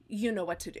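normal talking voice

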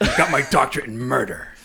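gruff, weathered put-on voice. Co-hosts keep up a bit for the episode; grizzled voice. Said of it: "we sound so grizzled".

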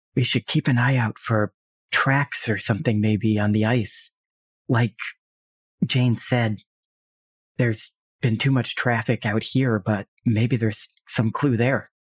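quiet whispering. Speaking as a character, whisper to the other two companions; whispering. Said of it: "she'll kind of whisper to the other two".

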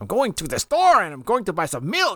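high, sing-song, put-on Spanish accent lilt. Speaker mimicking a man's delivery for the other speaker, imitating his fake Spanish-like inflection. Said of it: "He has this like inflection in his delivery".

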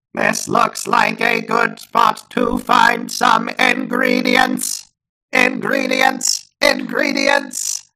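loud cartoon duck voice. Asked to perform the Kingdom Hearts ingredients line; Donald Duck voice. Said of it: "What do you want me to say in Donald Duck's voice?".

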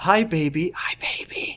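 very slow, drawn-out, soft hushed whisper. Reading a story aloud, the mother greeting her newborn daughter: whispering. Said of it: "I whispered to my daughter".

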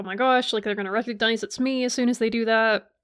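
plain

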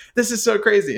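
high, thrilled, delighted fan scream. Retelling how a fan reacted to seeing band photos: imitating someone screaming excitedly.

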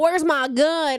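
put-on American accent. Retelling people from London imitating American accents: mock American accent. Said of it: "imitate American accents".

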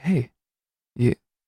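imitated soft-spoken voice. Retelling how Mike gets in someone's face: imitating someone speaking softly. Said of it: "speaks softly to him".

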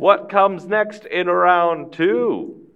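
sports announcer, very high, very slow, loud, drawn-out. Voicing the announcer as the crowd goes wild: announcer voice. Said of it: "The announcer is".

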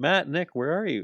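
high, hollering yell, shouting out. Retelling a man yelling for the Young Bucks on camera; retelling a yell. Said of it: "and he's yelling".

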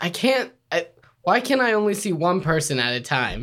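usual speaking voice

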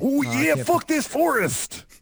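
very high, drawn-out wrestler voice. Voicing a comic character who talks like Macho Man Randy Savage. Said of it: "He talks like Macho Man Randy Savage".

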